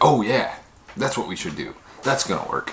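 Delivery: mocking, sarcastic tone with swooping pitch. Retelling how someone would answer the suggestion to pray, mock-sarcastic reply.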